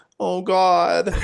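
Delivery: high, really scared, anxious, frightened voice. Recalling how Zach pretended to be anxious during those game parts: imitating Zach's fake scared voice. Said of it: "like in a really scared voice".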